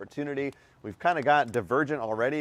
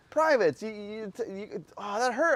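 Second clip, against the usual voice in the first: put-on pained voice, higher pitch; 8 semitones higher than usual. Retelling being hit and the pain rolling in: imitating own pained voice. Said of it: "the pain's rolling in".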